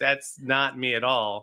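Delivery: ordinary delivery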